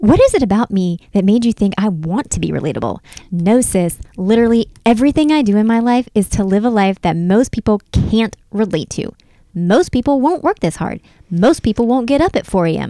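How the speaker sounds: acted no-nonsense, full of vigor, energetic and forceful. Reading aloud the words from her viral video, as asked: imitating her vigorous delivery. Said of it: "say it with the vigor that she said it with".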